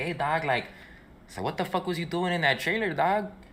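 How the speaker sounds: little, high, street-tough voice.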